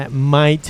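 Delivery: the word might said with heavy stress.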